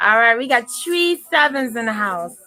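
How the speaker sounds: effortful attempted Jamaican accent. Announcing to the room that three sevens came up, attempted Jamaican accent. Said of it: "I'm really trying with this Jamaican accent".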